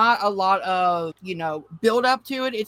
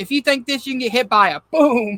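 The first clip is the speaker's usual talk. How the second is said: loud screaming outburst; 3 semitones higher, 5 dB louder than usual. Retelling a movie character's line to the group: imitating someone screaming. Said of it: "screaming at the group".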